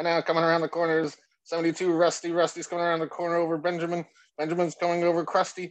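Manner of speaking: horse race announcer call. Teasing the other speaker about how he sounds, in a horse race announcer voice. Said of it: "sound like one of those horse track races".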